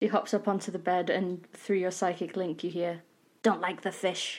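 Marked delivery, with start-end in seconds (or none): 3.4-4.4 goblin mare creature voice. Game narrator voicing a goblin mare heard through a psychic link, goblin mare voice. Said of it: "That was the mare's voice".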